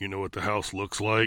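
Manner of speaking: growling voice rumbling like an engine. Narrator reads Clown's question in the car, Clown's growling engine voice. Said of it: "Clown asked in a growling engine of a voice".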